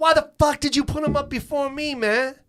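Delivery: very high, furious, angry yelling. Retelling how a man yelled about the show order, retelling a yell. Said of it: "He's yelling at Bob".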